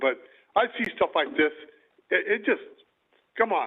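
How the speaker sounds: emotional, overcome, halting, faltering delivery. Apologizing partway through speaking, getting emotional. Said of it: "I don't mean to get emotional".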